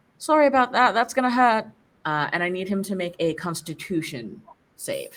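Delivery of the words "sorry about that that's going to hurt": loud, high yelling in character. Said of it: "and yell".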